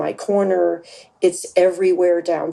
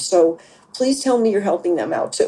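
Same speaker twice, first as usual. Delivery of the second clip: put-on whiny, whining voice, faster. Speaker presses the other person with a request; put-on whiny voice. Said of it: "Did you notice def- that I had the whiny voice?".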